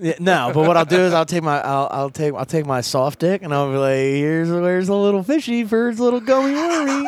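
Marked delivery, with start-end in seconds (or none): 4.0-7.1 creepy, coaxing put-on voice, pitched up. Retelling what he says to his partner, imitating himself in a creepy voice. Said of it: "That's so fucking creepy".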